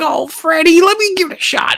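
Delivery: very high-pitched character voice.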